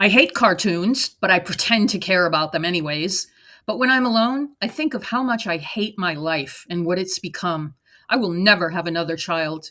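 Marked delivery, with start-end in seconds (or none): none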